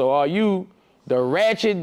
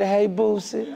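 mock intimate kissy voice, higher; 6 semitones higher than usual. Repeating back how another speaker greeted them: imitating a kissy greeting. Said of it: "I like how you said".

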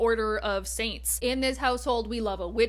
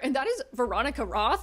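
voice cracking suddenly mid-word; 3 semitones higher than usual. Naming the author of the next novella to discuss, voice cracking. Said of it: "Why did my voice just crack?".

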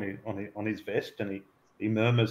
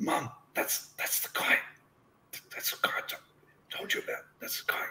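hushed, breathy whisper, stumbling over the words; 8 dB quieter than usual. Voicing the young assistant leaning in to the woman: whispering. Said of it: "you hear him whisper".

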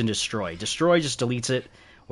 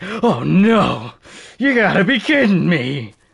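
mock dramatic dismay, higher and louder; 8 semitones higher, 9 dB louder than usual. Retelling a character's reaction to a broken stone axe: imitating a dramatic reaction. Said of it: "very dramatic when it comes to things".

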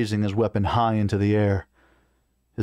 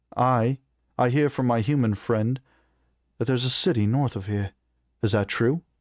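ordinary delivery

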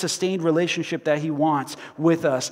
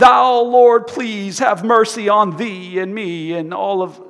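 strained, tense, solemn praying voice; 3 semitones higher, 6 dB louder than usual. Mocking how people change their voice when they pray, imitating a tense prayer voice. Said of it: "they change their voice".

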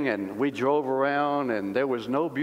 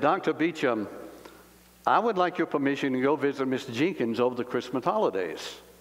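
ordinary talk

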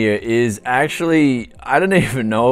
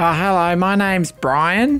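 put-on Australian bogan accent, raised pitch; 7 semitones higher than usual. Calling Microsoft Support, the caller gives a name in a put-on Bogan accent. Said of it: "time to put on that Bogan accent".

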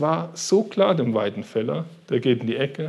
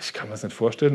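plain

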